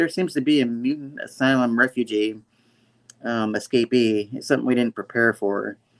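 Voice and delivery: ordinary talk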